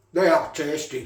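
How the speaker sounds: speaking with mouth full, chewing. Tasting the little burgers and apologising, talking with mouth full. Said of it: "I do apologise talking with my mouth full".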